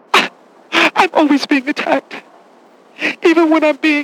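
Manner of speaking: mock sobbing. A character replying to others in a scene, fake crying. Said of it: "what exactly are you crying about?".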